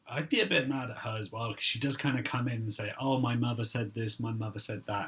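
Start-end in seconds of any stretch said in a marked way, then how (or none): 3.0-5.1 mocking, put-on privileged girl voice. Describing a girl who comes in quoting her mother, mocking a privileged girl. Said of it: "She's very obviously some privileged girl".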